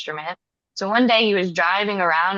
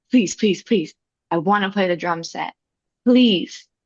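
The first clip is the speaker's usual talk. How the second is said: mock insistent, repeated pleading. Retelling asking the drum teachers to play the drum set: imitating own past begging. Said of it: "begging them".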